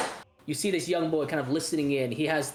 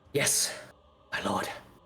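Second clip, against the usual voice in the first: hushed, low, soft whisper; 6 semitones lower than usual. Narrator voices the dark elf Rahadin answering through the door, soft whisper. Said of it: "he's you hear him say in this soft whisper".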